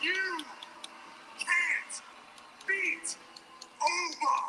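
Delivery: very slow, deliberate, lip-readable enunciation. Addressing viewers, saying it so they can read your lips: very slow. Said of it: "I'll say it very slow so you can read my lips".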